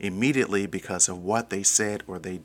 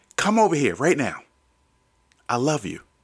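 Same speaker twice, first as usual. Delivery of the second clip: loud, forceful, harsh-edged, furious voice; 6 semitones higher, 6 dB louder than usual. Explaining how angry parents talk to their children, acting out a parent: mock-angry, forceful and loud. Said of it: "they'll do it with such anger and be so forceful and so loud".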